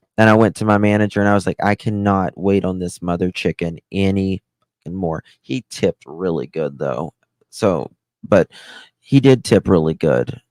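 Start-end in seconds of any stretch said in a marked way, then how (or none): none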